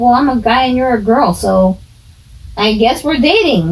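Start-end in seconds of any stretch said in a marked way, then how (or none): none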